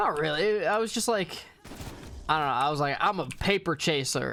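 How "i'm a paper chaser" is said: usual speaking voice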